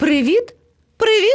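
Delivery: very high-pitched voice calling out. A parrot greets a baby elephant and a lion cub, calling out. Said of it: "гукнув до них".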